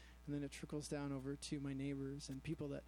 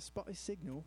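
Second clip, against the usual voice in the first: put-on British accent; 4 semitones higher than usual. Repeating a phrase for a joke, in a British accent. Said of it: "I have to say that with a British accent".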